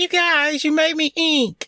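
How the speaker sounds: very high, slow, drawn-out cartoon voice. Recalling a scene from Finding Nemo: Finding Nemo squid girl voice. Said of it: "She sounds just like that little squid".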